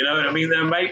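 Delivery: put-on Australian accent. Showing off an accent they practiced, speaking in an Aussie accent. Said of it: "I practiced my Aussie accent".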